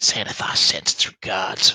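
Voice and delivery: whispered goblin creature voice. Narrating a sneak attack on a player, a goblin whispers: whispering goblin voice. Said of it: "a goblin voice whispers".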